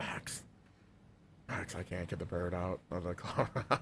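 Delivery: whispered, urgent, very hushed. Retelling what they said to Max back then, retelling a whisper. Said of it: "I was whispering like that too".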